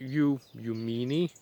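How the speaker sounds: slow, drawn-out, mocking villager voice.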